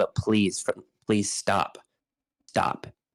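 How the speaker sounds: mock pleading, begging tone. Speaker retells begging his partner to stop, retelling own pleading. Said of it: "And I'm pleading like".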